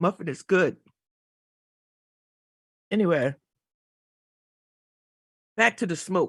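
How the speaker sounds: speaking mid-chew with mouth full. Host eating a muffin while talking about the smoke, talking while chewing. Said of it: "Forgive me for chewing".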